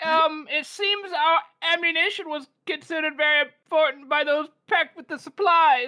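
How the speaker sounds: nervous, stammering, flustered voice. Voicing a sergeant caught by a general and his staff: nervous stammering sergeant. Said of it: "I like to imagine this guy's like".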